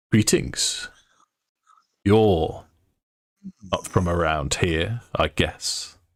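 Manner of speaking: very deep, deep voice. Narrating a game scene, voicing someone at the door greeting a player character, deep, deep voice. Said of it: "someone in this deep, deep voice say".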